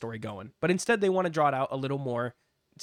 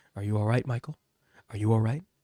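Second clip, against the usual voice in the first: put-on muttered aside, lower pitch; 4 semitones lower than usual. Mocking a commentator's constant check-ins: imitating Joe Tessitore under his breath. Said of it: "Under his breath".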